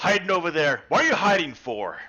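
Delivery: shouting. Calling out to a player who was hiding over there, yelling. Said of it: "are you yelling at me?".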